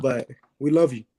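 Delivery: emotional, choked-up, voice catching on words. Thanking someone in person for what they mean to the group, choked up with emotion. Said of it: "I'm getting a little choked up".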